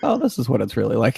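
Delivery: ordinary talk, nothing marked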